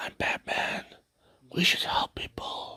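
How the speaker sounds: hushed, almost whispered, soft-spoken voice. Complaining about how a movie Batman talks, the speaker does a soft-spoken whispery Batman voice. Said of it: "soft spoken, almost whispery".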